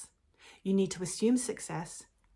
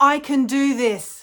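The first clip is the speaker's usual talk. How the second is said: booming, very loud, slow, self-assured confident voice; 8 semitones higher, 15 dB louder than usual. Leading viewers in saying an affirmation together after a countdown: loud, confident voice. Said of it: "say in a loud, confident voice".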